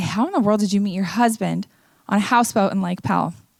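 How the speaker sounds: ordinary delivery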